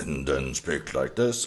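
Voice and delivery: low, soft voice.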